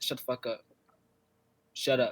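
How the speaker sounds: put-on brash, no-filter delivery. Speaker acts out telling the voice in their head to stop; retelling a brash command. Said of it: "I say it like that because that's how I am".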